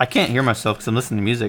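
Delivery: ordinary delivery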